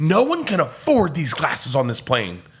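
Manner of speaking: mock furious rant with wild, swooping pitch. Retelling a passenger losing his mind over broken glasses: imitating someone losing it. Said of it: "he's losing his mind".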